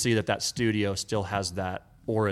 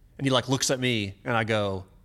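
normal talking voice

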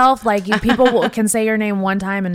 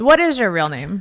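ordinary delivery

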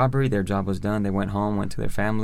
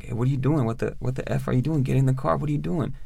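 play-acted calling out; 4 semitones higher than usual. Telling how they got out of the car and yelled at him, retelling own yelling. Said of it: "And I was yelling".

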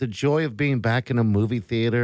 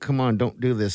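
ordinary talk

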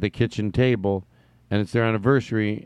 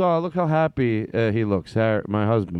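ordinary delivery

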